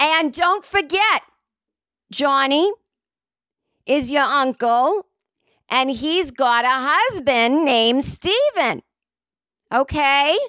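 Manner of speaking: slow, screamed, yelling woman's voice. Retelling what a woman in line kept screaming to kids: imitating a woman screaming. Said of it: "And she's screaming it".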